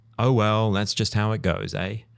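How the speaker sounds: put-on Canadian-accented muttering. Imitating Canadians letting cool things fly under the radar: imitating a Canadian mutter.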